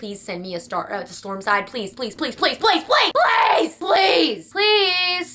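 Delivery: put-on ranting pleading. Speaker acts out a ranting TikTok video begging for the next one, mock-desperate begging. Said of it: "make a ranting video on TikTok".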